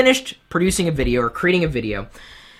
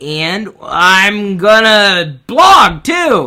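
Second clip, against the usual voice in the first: mock voice, slow, loud and dragged out. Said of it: "anybody comes to me saying".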